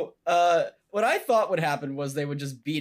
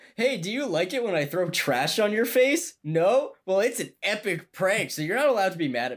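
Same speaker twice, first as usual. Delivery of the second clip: high, sarcastic prankster voice. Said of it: "It sounds like you're being sarcastic".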